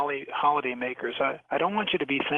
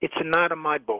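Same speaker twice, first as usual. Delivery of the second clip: heavy put-on Italian accent; 2 semitones higher than usual. Retelling the clue he finally gave after half an hour: heavy fake italian accent. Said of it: "in a very heavy, fake Italian accent".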